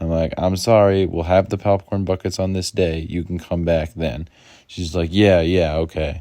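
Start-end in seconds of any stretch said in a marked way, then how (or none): 5.1-6.2 really patronising, condescending, dismissive talking-down tone. Retelling what a woman said to them, mimicking a condescending reply. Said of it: "a really condescending voice".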